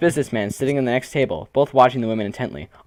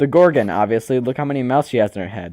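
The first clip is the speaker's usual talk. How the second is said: usual speaking voice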